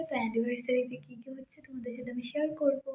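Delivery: very quiet, soft talk.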